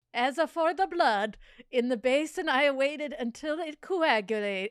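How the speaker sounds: high, loud fake Italian accent drifting toward German. Reading a passage aloud, speaker tries a put-on foreign accent. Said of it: "Should I be doing this in an Italian accent?".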